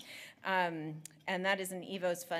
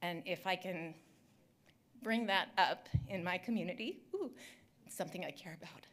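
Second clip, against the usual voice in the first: shaky voice starting to wobble with feeling; 2 semitones higher than usual. Talking about bringing this work to their own community, shaky voice. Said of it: "my voice is getting shaky".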